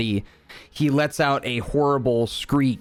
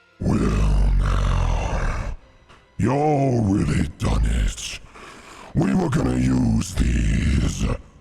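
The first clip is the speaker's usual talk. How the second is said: menacing character voice, lower pitch. Voicing a transformed character who threatens the players: scarier version of character voice. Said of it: "you hear him in his kind of same voice that he has before, but just a bit more, um, kinda, I guess, scary".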